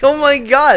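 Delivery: amazed, pitched high and loud.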